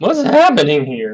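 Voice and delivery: voice cracking. Asking what's happening in the calculation: voice cracking. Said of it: "my thirty-four-year-old man voice cracks".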